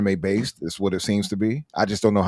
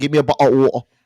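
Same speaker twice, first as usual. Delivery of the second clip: fake British accent, higher and louder; 6 semitones higher, 7 dB louder than usual. Interrupting a discussion to show off a put-on British accent. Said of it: "My British accent is pretty good".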